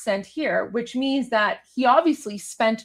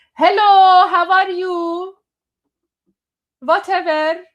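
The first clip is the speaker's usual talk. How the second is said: accent from Iran; 8 semitones higher, 8 dB louder than usual. Explaining that you speak English with no accent, you demonstrate a forced Iranian accent. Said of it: "my Iranian accent will come out, but I have to like really force it".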